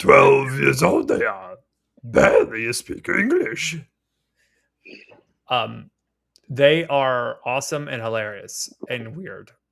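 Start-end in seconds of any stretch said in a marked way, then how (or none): 0.0-3.8 voice cracking then swooping in pitch. Telling another speaker about visiting nieces, Yoda voice. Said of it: "Why you speak like that?".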